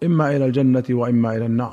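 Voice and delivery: ordinary talk, nothing marked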